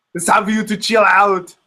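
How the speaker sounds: put-on Austrian action-hero accent. Telling how you do the Arnold thing every time, show it with an Arnold impression. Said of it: "I do the Arnold thing every time".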